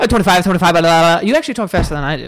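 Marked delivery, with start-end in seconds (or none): 0.1-1.3 mock auctioneer patter, louder. Showing how an auction caller sounds: imitating an auctioneer. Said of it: "Auction people?".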